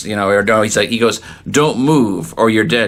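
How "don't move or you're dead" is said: plain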